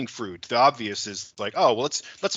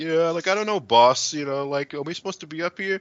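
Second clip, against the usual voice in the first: heavy put-on New York Italian accent, pitched up; 5 semitones higher than usual. Imagining a chainsaw crew worker asking his boss, in a thick New York Italian accent. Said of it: "thick New York Italian accent".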